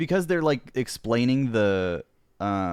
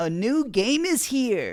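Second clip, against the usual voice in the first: fake advertisement announcer voice; 12 semitones higher than usual. Imitating a Nintendo commercial announcer: Nintendo announcer voice. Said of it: "doing the Nintendo announcements and commercials".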